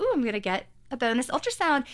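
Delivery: play-acted, eager, excited delight, swooping sing-song. Retelling their own reaction at an ultrasound appointment: mock-excited, imitating past self. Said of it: "And I was like all excited".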